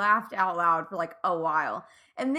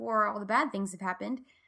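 normal talking voice

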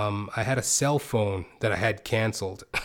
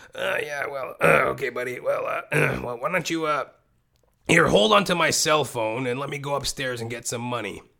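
put-on acted drunk voice; 4 semitones higher than usual. Retelling what his past self told a man back then: imitating own drunk voice. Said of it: "that's how I sounded back then".

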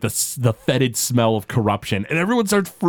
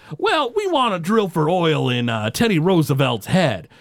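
put-on Texan-style man's accent; 4 semitones higher than usual. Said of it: "Texan-style guy is like".

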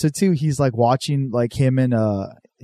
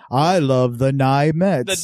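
put-on fake American accent. Retelling a cartoon scene where a character tries to be american: imitating a character faking an american accent. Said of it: "When he's trying to be American".

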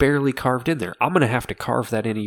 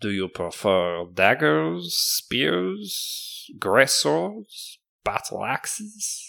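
horrible fake French accent, much higher pitch; 3 semitones higher than usual. Narrating a character who offers weapons to a player; horrible french accent. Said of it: "With this horrible French accent?".

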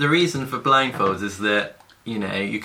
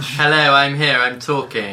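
slow, loud, stilted, unnatural put-on voice; 5 semitones higher, 5 dB louder than usual. Answering a roll call with the others: put-on unnatural voice. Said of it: "Should we just try talking in a normal voice?".

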